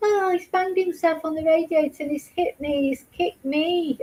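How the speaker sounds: mocking, exaggerated Birmingham (Brummie) accent. Repeating their earlier words when asked to: stupid birmingham accent. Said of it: "in your stupid Birmingham accent".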